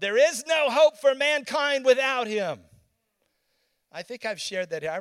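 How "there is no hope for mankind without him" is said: loud, booming, commanding, resounding authoritative voice. Retelling a loud voice they heard speaking, booming authoritative voice. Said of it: "And it said in a booming tone".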